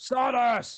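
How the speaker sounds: loud shouting at high pitch. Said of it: "Balthor started shouting".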